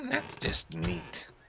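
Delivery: horrible, whispery, breathy, badly put-on cartoon mother voice. Repeating a line again as a horrible Marge Simpson impression. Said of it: "We gotta do my Marge Simpson impression again".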